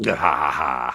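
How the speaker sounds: very deep, low, maniacal evil-villain laughter. Speaker shows off the evil warlord laugh he means: maniacal laughter. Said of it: "Maniacal laughter".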